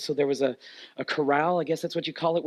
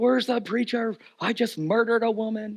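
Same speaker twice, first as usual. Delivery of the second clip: put-on drunk man voice, high, screaming; 7 semitones higher than usual. Retelling a drunk man coming up the driveway: imitating a drunk man screaming. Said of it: "Literally screaming it".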